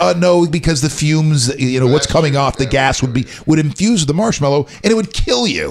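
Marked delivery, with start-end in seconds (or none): none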